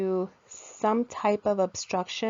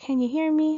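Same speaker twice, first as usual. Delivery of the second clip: high-frequency talking voice; 8 semitones higher, 5 dB louder than usual. Explaining high-frequency hearing loss: high-pitched voice. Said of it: "the higher frequency tones, when you talk, like if you're talking".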